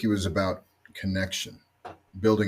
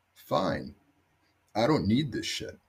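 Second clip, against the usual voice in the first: put-on whiny voice, swooping and laid on thick; 3 dB quieter than usual. Retelling the answer to a man who ordered them off the field: mock-whiny voice. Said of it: "in my best whiny voice".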